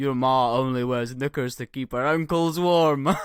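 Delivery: loud, best-effort put-on Scottish accent. Reading a user-submitted insult from a subreddit aloud, put-on Scottish accent. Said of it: "read out in my best Scottish accent".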